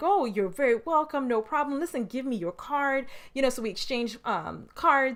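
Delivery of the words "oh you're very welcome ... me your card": overjoyed, welcoming, delighted tone. Retelling meeting Les Brown on a plane, imitating Les Brown overjoyed. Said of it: "overwhelmed and overjoyed".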